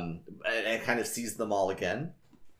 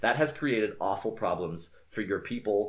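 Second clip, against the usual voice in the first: ordinary delivery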